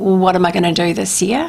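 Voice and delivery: plain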